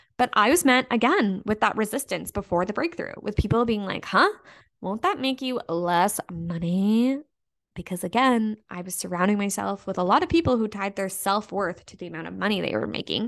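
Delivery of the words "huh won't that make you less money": slow, drawn-out, doubtful skeptical voice. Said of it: "as I'm saying this in this voice".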